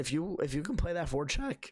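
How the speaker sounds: voice cracking. Answering a chat comment about the forecheck, voice cracking. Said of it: "excuse me, voice crack".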